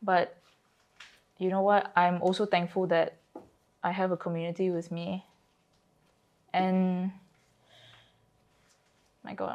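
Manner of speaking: on the verge of tears. Speaking with another person in conversation, on the verge of tears. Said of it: "I'm gonna cry".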